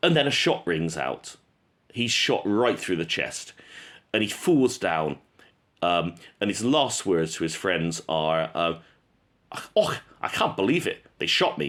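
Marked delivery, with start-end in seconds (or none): 9.7-11.7 poor, fake, swooping Scottish accent. Retelling a shot soldier's last words to his friends, in a bad scottish accent. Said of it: "that's not a good Scottish accent".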